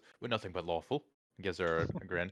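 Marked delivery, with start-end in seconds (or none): 0.2-1.0 playfully insincere, facetious, tongue-in-cheek tone. Role-play character answering a request to come by the bar, facetious. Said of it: "I'm definitely being facetious".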